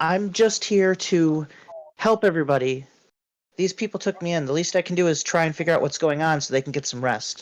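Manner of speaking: eager, very fast, rattled-off tonal speech. Narrator voicing Kara, who is eager to help, in Kara's soft, very fast voice. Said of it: "a softer, very fast, tonal uh, intonation".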